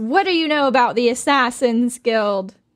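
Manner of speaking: full-throated, loud screaming. Narrating a scene where she slaps a man and demands answers, screaming. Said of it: "And she screams".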